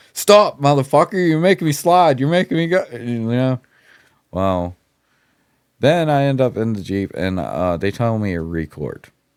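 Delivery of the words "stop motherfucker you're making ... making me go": mock yelling, very high, shrill. Retelling being dragged to the Jeep, imitating someone yelling. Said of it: "I'm yelling at him the whole way".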